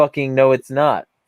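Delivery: ordinary talk, nothing marked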